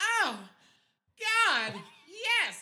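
all-out shrill, very loud, high-pitched yell. Retelling what a camper shouted from a tent: imitating someone yelling loudly. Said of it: "as loud as he can".

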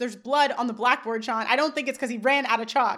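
plain

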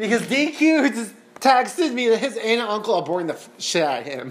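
words broken up by laughing throughout. Apologizing while reading out a text message: laughing while talking. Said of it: "I'm sorry, I'm laughing".

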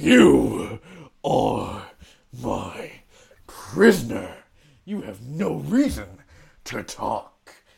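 huge giant orc voice, deep, rough and rumbling. Narrator voicing a huge orc who lifts a prisoner one-handed, speaking as a giant orc. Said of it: "he just picks up Rilo and just with one hand and says".

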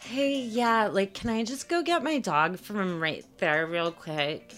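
put-on demanding, entitled young woman type voice. Retelling what a girl asked a cop: imitating a Karen. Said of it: "a future Karen in training, she's like".

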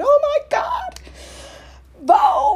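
shrill, swooping, very loud, very high, drawn-out shriek. Telling of reacting to the twins over a Vogue letter; retelling a screech. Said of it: "I was like screeching at the twins going".

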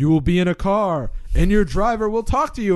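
ominous, eerie, spooky voice. Describing a feeling of dread, voicing an imagined bad thing in a spooky voice. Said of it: "like in a spooky voice".

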